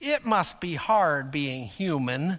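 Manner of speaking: slow, sarcastic, snarky computer voice. Retelling what an old chess computer said when winning: imitating a snarky computer voice. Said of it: "in this really snarky voice".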